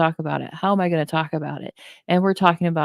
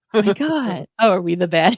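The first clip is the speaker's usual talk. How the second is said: put-on laughter while talking; 3 semitones higher than usual. Speaker recalls catching themself feeling offended, retelling a laugh while talking. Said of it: "I have to laugh about it going".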